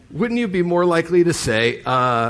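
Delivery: plain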